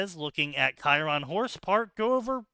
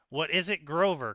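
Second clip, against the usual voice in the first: usual speaking voice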